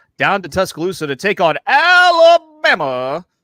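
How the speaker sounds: high, loud college football announcer voice. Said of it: "in my best Keith Jackson voice".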